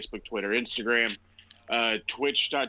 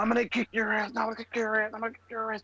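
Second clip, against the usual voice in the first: mock, very high, shrill, repeated screaming; 11 semitones higher than usual. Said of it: "screaming and yelling and yelling and screaming".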